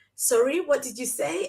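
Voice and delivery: ordinary talk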